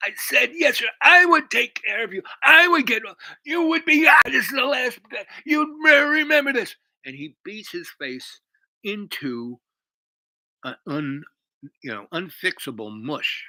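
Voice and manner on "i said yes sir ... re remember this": very high, loud, raging monster roar. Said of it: "goes from the calm, mild guy to a raging monster".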